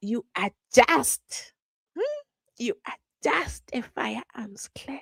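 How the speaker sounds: put-on character voice with swooping pitch. Imitating Mshololo saying a line about a firearms clerk: Mshololo impression. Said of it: "Let me get into my Mshololo character".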